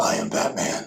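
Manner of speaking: hushed, breathy, heroic masked-hero character voice. Speaker tries out a voice mid-conversation: Batman voice. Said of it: "I can totally talk like Batman".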